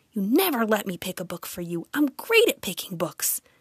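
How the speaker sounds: in a hiss. Starla hurries to win Sawyer over before Mrs. Graves arrives; hissed. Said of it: "she hissed".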